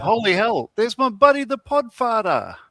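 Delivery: full exaggerated put-on Boston accent. Quoting what a friend says on air, in a full Boston accent. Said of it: "I went full Boston accent there".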